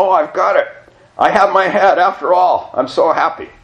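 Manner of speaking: shrill, very high, very loud, elated cry. Reading a story: a woman rushes around, elated exclaiming. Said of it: "she was so elated that she rushed around exclaiming".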